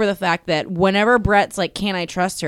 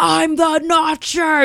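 shouted, high-pitched yell; 8 semitones higher than usual. Retelling what Brett yelled out of the limo: imitating Brett yelling. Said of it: "yelling it out of the limo".

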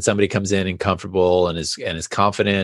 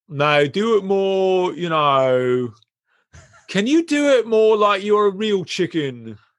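put-on unhurried, higher older British gentleman, "know" drawn out; 12 semitones higher than usual. Act out an older gentleman asking you to do it more, imitating an older british gentleman. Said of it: "this older gentleman, British".

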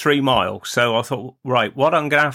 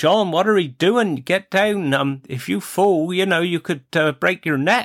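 easy, unstrained call; 5 semitones higher than usual. Recalling people calling up to an old man on a roof, retelling their shout. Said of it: "they'm shouting there".

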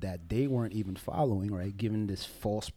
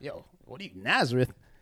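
scoffing, sarcastic, dismissive put-down tone; 4 semitones higher, 4 dB louder than usual. Retelling an apostle's remark about nazareth: imitating a sarcastic remark. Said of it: "he said it sarcastically".

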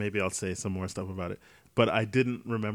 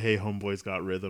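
ordinary delivery

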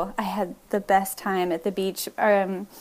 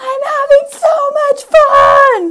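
shrill, very high, loud, playful, drawn-out shriek; 13 dB louder than usual. Recounting filming Emma vacuuming with music blasting, imitating Emma screaming. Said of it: "she's just screaming".

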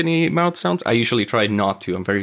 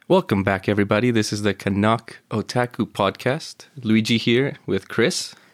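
late-night radio broadcast voice. Opening a podcast episode: late-night radio broadcast voice. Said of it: "like a radio broadcast that you'd hear at two A M".

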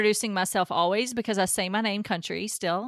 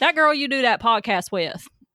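country drawl, North Carolina style; 4 dB louder than usual. Retelling what a boyfriend's dad from North Carolina said: imitating a North Carolina country accent. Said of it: "Maybe I shouldn't not do the accent".

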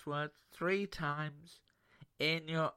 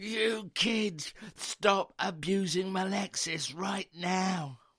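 mock stern, slow, drawn-out shout; 4 semitones higher, 4 dB louder than usual. Retelling rushing into the playroom at the children: imitating own shout. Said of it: "I shouted at the children".

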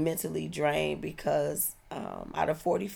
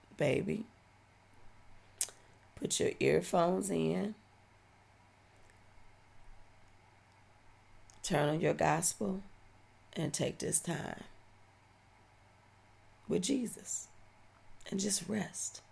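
soft, gentle, understated murmur; 6 dB quieter than usual. Retelling what the aunt said on the phone: imitating aunt's subtle voice. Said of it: "in this subtle voice".

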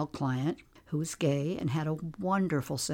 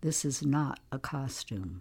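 plain

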